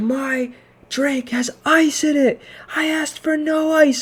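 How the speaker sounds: mock shrill scream, very high, very slow, stretched out. Retelling a customer's complaint about ice in her drink: imitating a customer screaming. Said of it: "she starts screaming".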